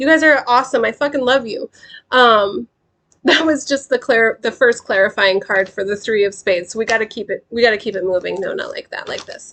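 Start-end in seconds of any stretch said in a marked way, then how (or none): 0.0-1.7 teary, pitched-up gush, overcome with pride. Thanking the group after praising their hard work: teary-eyed. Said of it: "I'm all teary-eyed".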